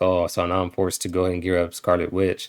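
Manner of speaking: usual speaking voice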